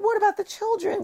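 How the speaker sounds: high, pleading. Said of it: "a mum was like".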